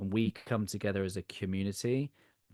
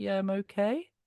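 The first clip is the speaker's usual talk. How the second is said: okay lifts with question-like rising pitch; 12 semitones higher, 3 dB louder than usual. Describing intonation that makes a reply sound like a question: question-like rise on okay. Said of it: "It's like more of a question than it is a statement".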